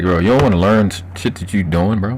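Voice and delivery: ordinary talk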